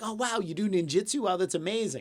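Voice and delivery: play-acted geeky, earnest, gushing admiration and awe. Retelling own reaction as a kid to a ninjutsu claim: imitating own nerdy younger self. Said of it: "I'm such a nerd".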